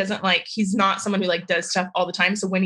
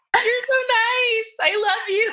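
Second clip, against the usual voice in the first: tearful gushing voice, very high and stretched out. Responding to praise of her business, tearing up. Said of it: "I'm tearing up".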